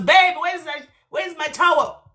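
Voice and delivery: put-on high, helpless, childlike calling out. Imitating a man in the shower calling for his towel: imitating a man shouting.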